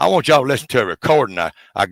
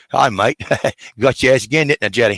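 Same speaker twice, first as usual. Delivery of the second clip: dog voice with put-on Australian accent. Imagining his Australian Kelpie dog talking to him, in an Australian accent. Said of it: "I can just hear it in Australian".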